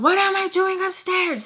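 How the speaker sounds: crazed, very high banshee shriek. Retelling how an angry woman woke her, imitating someone yelling like a banshee. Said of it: "she yells like a freaking crazy banshee".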